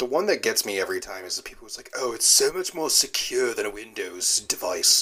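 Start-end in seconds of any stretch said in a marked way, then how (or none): 2.0-5.0 slow, phony put-on British accent. Mocking a certain kind of phone user, in a fake british accent. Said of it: "I'm using the fake British accent for these people".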